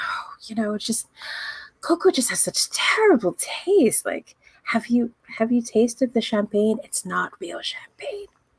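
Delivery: soft, breathy, barely voiced whisper. Telling a story, the speaker repeats what a charmed man leaned in to say: whispering. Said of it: "he leans in and whispers".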